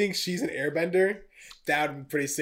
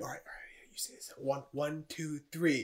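put-on whispering, quieter; 9 dB quieter than usual. Acting out two characters planning a line together: imitating someone whispering.

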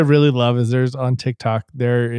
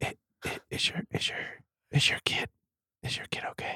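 unvoiced, creepy ASMR-style whisper. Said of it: "This could even get creepier".

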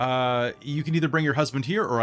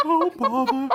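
very high, ghostly character voice; 10 semitones higher than usual. Voicing the stall owner again: Winnie the Pooh voice. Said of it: "That's like Ghost Winnie the Pooh".

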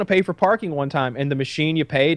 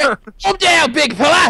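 put-on Australian wildlife host voice, higher and louder; 11 semitones higher, 6 dB louder than usual. Retelling a sketch where Steve Irwin ties up a man: imitating Steve Irwin. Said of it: "Steve Irwin".

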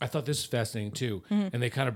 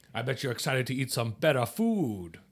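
put-on French accent attempt, slipping and fading. Retelling how a man teased the speaker, in a slipping French accent. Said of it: "Lost it again".

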